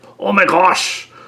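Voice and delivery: put-on Irish accent. Retelling a past joke in a put-on irish accent. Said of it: "I put on an Irish accent".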